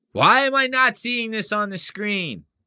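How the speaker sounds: pissed-off complaint. Trying out an impression of Nick, imitating Nick, mock-pissed-off complaining. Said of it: "I'm getting a good Nick".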